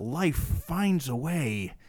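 very slow, weird, drawn-out, word by word. Doing an impression for another speaker: Jeff Goldblum impression. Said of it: "your best impersonation yet of Jeff Goldblum".

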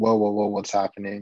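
ordinary delivery

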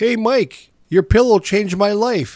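mock high, loud shouted call-out. Retelling how a passerby called out to a pillow seller: imitating someone yelling out. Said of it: "yelled out".

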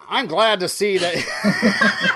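put-on loud, slow, booming old-time radio sports announcer voice.

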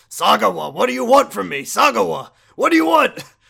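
very loud, rough, high-pitched bellow. Retelling a phone call in a game scene: Shimano impression. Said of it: "he's like".

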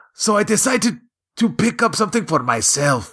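put-on strong Mexican accent. Quoting a man talking to a group of nerds, in a strong Mexican accent. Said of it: "talking in a very strong Mexican accent".

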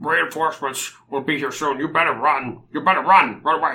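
fish-man voice. A fish man answers the party in Undercommon, fishy accent. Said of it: "So he's a slippery, slimy-looking fish man. / Just with a fishy accent".

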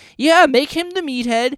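mocking voice, high-pitched. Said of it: "fucking Archie being like".

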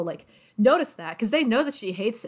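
ordinary talk

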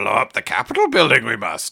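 put-on gravelly character voice. Imitating how an audiobook narrator sounded, in a gravelly Yoda voice. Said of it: "He sounded like Yoda with a gravelly voice".

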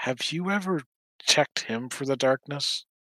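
soft, hushed half-whisper. Bot leans in as she gets close enough, Bot half-whispering. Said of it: "Bot kind of leans in and whispers".

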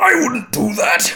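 very loud, very high, shrill anime yell. Describing a video where someone voices Vegeta, quote him: Vegeta impression. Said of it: "he's got a pretty good vegeta impression".

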